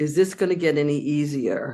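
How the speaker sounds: ordinary talk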